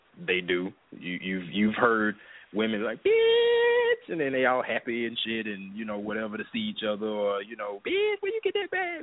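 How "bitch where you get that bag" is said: very high, terrible put-on woman voice. Imitating women greeting each other, in a terrible woman voice. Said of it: "My woman voice is terrible".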